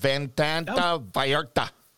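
fake, put-on Mexican Spanish accent. A sports show host repeats the tournament's venue name, put-on Mexican Spanish accent. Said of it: "Is that a good accent?".

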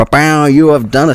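loud, high, celebratory bow bow noise. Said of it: "Why did you go bow bow".

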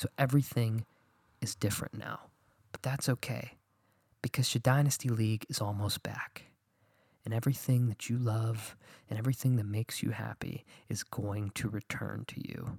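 soft radio-style voice. Talking late at night, a speaker does a best NPR voice, quietly. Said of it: "I'm talking quietly. I'm doing my best NPR voice".

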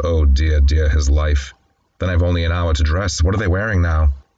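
ordinary talk, nothing marked

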